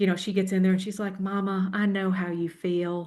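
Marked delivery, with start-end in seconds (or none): 1.2-3.1 put-on patient, kind, slow, drawn-out Texas accent. Teasing a business partner from Texas: imitating Shannon's Texas accent. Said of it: "she's got that Texas accent".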